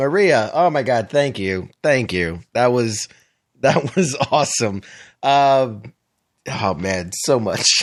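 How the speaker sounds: talking through suppressed, held-back laughter. Thanking a guest while people talk over them, holding back laughter. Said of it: "I'm just trying to hold it together".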